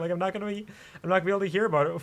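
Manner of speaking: voice catching, choked up, close to tears, rising pitch. Telling someone their baby may arrive while away: choked up. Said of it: "that kinda choked me up".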